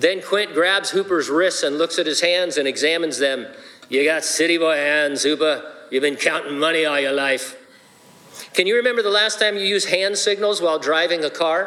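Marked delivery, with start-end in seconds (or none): 3.9-7.6 put-on Irish accent. Retelling Quint's first meeting with another man in Jaws, Quint voice with Irish accent. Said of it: "It's my best Irish accent".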